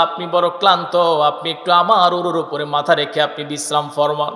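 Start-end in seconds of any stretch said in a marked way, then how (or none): none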